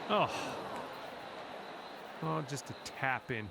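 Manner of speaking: slow, disgusted, let-down tone. Commenting on a putt that leaves just a tap in: disgusted. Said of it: "John, you sound disgusted".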